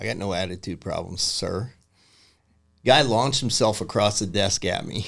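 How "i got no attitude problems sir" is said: soft, casual, unbothered, offhand tone. Retelling his own answer to an officer questioning his attitude: retelling a casual reply. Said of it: "just equally as casually".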